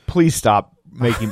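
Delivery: put-on bored tone. Retelling how a woman reacted, so bored with it: imitating someone bored. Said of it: "so bored with it".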